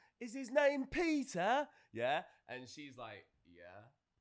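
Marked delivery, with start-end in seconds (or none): 0.2-1.7 put-on shrill, very loud, high English accent. Retelling how a guy answered her, the speaker quotes him in an English accent. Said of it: "in an English accent like".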